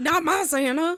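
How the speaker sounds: put-on parodied older-generation accent. Mocking how boomers would react, in a mocking boomer accent. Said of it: "Because they all have that a- accent".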